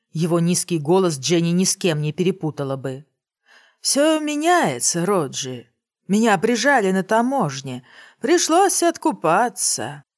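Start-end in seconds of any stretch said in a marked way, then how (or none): 3.9-9.9 lazy, unhurried drawl with stretched-out vowels. A stranger speaks to another man, overheard at a window, in a lazy drawl. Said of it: "лениво растягивая гласные".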